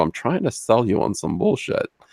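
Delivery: smug, patronizing, condescending talking-down tone. Mimicking how people who all talk alike sound: imitating a patronizing tone. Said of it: "the same kind of patronizing sort of".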